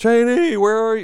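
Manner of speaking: play-acted high, shrill, loud, frantic, panicked scream. Retelling scootering down the street searching for her: reenacting screaming a name. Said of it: "just screaming her name".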